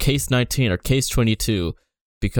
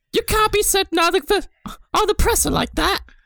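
put-on Cockney accent, much higher. Describing how commoners in the sewing factory talked, Cockney accent. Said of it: "and some of it's like actual Cockney British".

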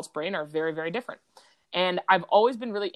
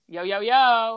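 brash, sassy, loud and high-pitched; 5 semitones higher, 5 dB louder than usual. Starting the show after inviting listeners to enjoy, sassy greeting. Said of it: "one of the sassiest starts".

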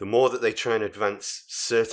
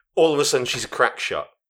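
normal talking voice

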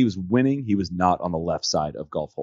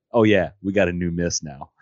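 imitated deadpan delivery. Retelling what he said to Stevie after hooking one out of bounds, imitating a deadpan reply. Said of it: "with a deadpan straight face".

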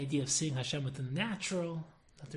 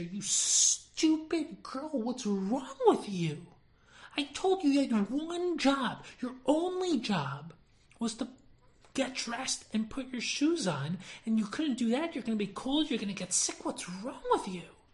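put-on angry screaming, loud, high and furious; 8 semitones higher, 5 dB louder than usual. Retelling how a girl screamed at her sister, acting out a scream. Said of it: "she screams at her sister".

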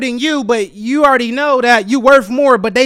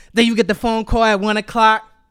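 usual speaking voice

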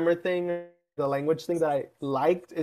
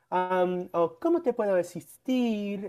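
mock cute valley girl Spanish, quieter, slower; 3 semitones higher, 4 dB quieter than usual. Describing how people in mexico talked, imitating very cute talk. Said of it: "talked like that or like very cute".

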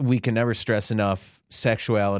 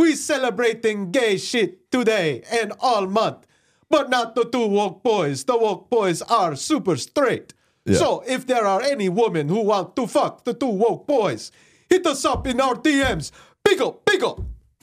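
Jamaican accent in a very high voice; 14 semitones higher than usual. Speaker addresses listeners about the two woke boys, in a Jamaican accent. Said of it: "That was like Jamaican".

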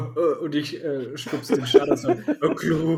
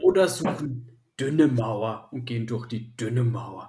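dim-witted orc brute voice with broken speech; 3 semitones lower than usual. In a role-playing game, a player speaks as an orc character, dim-witted orc voice.

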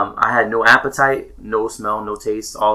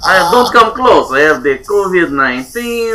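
fake Russian accent, higher and louder; 7 semitones higher, 5 dB louder than usual. Joking about catching covid in Russia: put-on Russian accent. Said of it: "he wanted to hear the Russian".

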